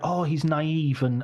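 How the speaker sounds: ordinary delivery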